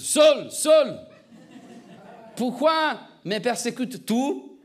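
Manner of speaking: slow, booming, grand voice of God. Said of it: "je fais la voix de Dieu un peu plus".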